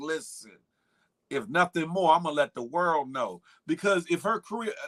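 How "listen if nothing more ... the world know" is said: ordinary delivery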